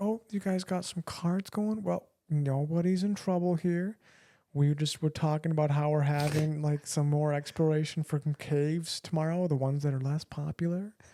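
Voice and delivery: laid-back, friendly southern drawl. Retelling what the DNR guy said to friends playing euchre, in a light, laid-back drawl. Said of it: "They got the draw".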